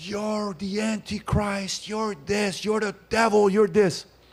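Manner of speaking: acted very high shrill screaming rant. Retelling a heckler in the crowd, imitating someone screaming. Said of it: "starts screaming".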